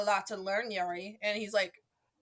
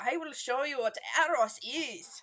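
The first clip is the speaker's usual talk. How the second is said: heavy, strong, laid-on put-on Swiss accent; 4 semitones higher than usual. Retelling a show character's line to a friend: super Swiss accent. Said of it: "speaking in a super like Swiss uh, accent".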